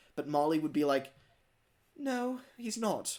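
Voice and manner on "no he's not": put-on timid, hesitant, high, unconfident voice. Acting out Molly answering the big engines: imitating someone answering without confidence. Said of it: "she wouldn't say it with confidence".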